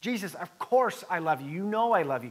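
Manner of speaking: mildly frustrated, a little fed-up tone. Retelling Peter answering Jesus the third time: imitating frustrated Peter. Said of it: "Peter's probably getting a little bit frustrated".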